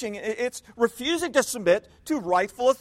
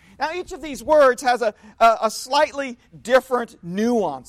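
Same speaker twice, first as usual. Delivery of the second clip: ordinary talk, nothing marked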